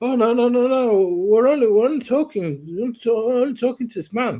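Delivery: high, panicky, stumbling voice. Retelling how two blokes reacted when a senior manager talked to them, imitating panicked protest. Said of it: "and they start panicking, going".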